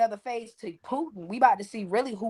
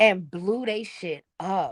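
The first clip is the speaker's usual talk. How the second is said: ordinary talk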